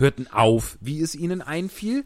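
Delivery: ordinary delivery, nothing marked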